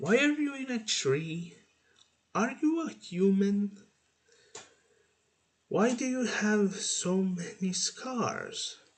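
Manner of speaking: squeaky, high-pitched little creature voice. Reading a story aloud, a creature asking questions: high-pitched squeaky voice. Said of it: "she asked in a high-pitched, squeaky voice".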